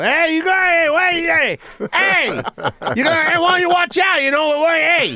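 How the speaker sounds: very high-pitched, loud hollering. Showing how to act a New York construction worker on break: yelling at people. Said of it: "And you're just yelling at people".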